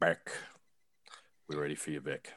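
sultry, seductive, very soft, low, hushed voice. Calling up the next person who is ready, in a sexy voice. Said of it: "that sounded really sexy".

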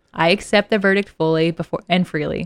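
ordinary delivery

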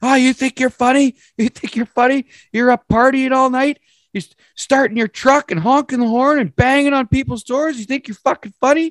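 furious, shrill, very high-pitched screaming. Retelling how a stranger at the door started screaming: imitating a man screaming. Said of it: "this guy just starts screaming at me".

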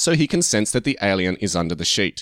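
plain

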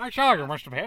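put-on half-committed weird old-timey manager voice. Repeating another speaker's odd voice, speaker says it in old-time baseball GM voice. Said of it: "GM of an old-time baseball team".

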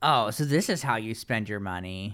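normal talking voice

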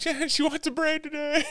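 mock shrill, very high yell. Retelling calling upstairs for help with a braid: imitating yelling upstairs. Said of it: "yelling upstairs".

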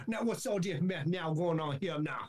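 comedic, put-on Cajun accent character voice. Imitate an actor in a court television show sketch, in Jason Sudeikis's Cajun character voice. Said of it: "he talks like that the whole time".

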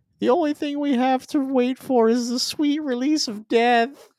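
really high-pitched voice, way up high. Speaker describes a trailer moment after a capture, in a high-pitched Luma voice. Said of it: "it's got this really high-pitched voice and it's just like".

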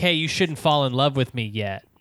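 normal talking voice

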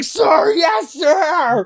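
put-on very high, loud, all-out yell. Gushing about a favorite character who is always loudest, imitating a loud shout. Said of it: "he's always the loudest one".

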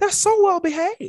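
very high, loud, caught-off-guard surprised tone. Retelling a plane ride, the speaker imitates a woman: imitating a surprised tone. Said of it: "in a surprised tone and says".

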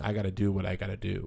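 normal talking voice

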